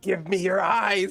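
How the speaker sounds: very high, shrieking monster scream. Game master voicing the sun attacking a player's character; screaming sun creature. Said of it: "literally just screams at him".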